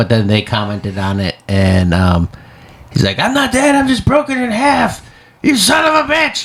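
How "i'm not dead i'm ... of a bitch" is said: pitch pushed way up high. Quoting a fake profile's comment on a death post: Jim Ross voice. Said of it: "I read it in his voice".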